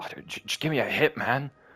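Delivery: high-voiced, pleading, wheedling begging. Retelling how a homeless guy asked for a cigarette, quoting a homeless man. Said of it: "and he's like".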